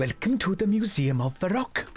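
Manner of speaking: put-on Welsh-accented voice. Voicing the curator of the Museum of Varrock in a game: Welsh accent. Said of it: "check this is a good accent".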